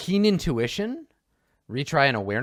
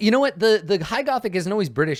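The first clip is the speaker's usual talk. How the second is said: ordinary talk, nothing marked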